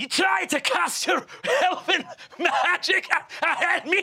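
indignant, sputtering, very high-pitched spluttering outrage. Voicing Torak answering a spell cast at her: Torak spluttering with rage. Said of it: "Torak looks down and says".

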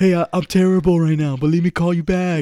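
voice on the phone. Retelling what Angel said on the phone: imitating Angel's voice. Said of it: "I knew it when I heard that voice".

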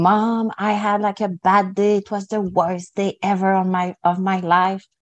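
mock mad and sad. A mother retells her son coming home from school saying this; mock mad and sad. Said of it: "being super mad and sad and being and saying".

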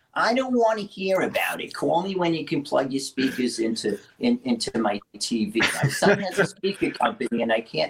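put-on Brooklyn accent. Retell your mother's phone call about hooking speakers to her tv, imitating her famous brooklyn accent. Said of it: "in her famous Brooklyn accent".

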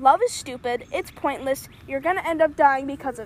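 normal talking voice

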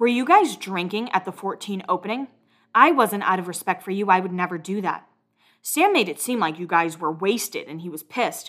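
ordinary talk, nothing marked

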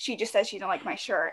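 ordinary delivery

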